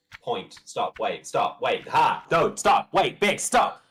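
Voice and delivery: loud yelling, shouting. Calling out stop as soon as chat says it: yelling. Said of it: "I'm gonna shout, I'm gonna scream".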